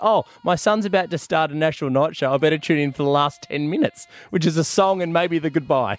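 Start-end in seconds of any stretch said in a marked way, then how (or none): none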